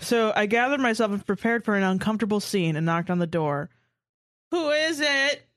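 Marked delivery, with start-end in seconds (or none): 4.5-5.4 high, whining, near-crying voice. Narrator reads a man answering a knock at his door, whiny voice. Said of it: "I heard his whiny voice".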